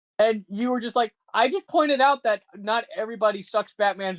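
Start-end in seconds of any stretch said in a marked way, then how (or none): none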